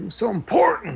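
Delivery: put-on high, loud furious rage, voice cracking. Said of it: "breaks his voice".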